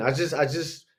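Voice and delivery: ordinary delivery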